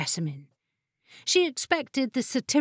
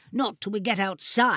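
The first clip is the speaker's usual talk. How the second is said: ordinary delivery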